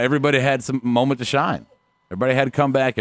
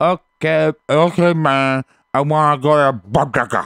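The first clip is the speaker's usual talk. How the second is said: slow, bad put-on Mexican accent; 2 semitones higher, 4 dB louder than usual. Trying out an accent after being told it's hard: attempted mexican accent. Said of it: "it's hard to do one Mexican".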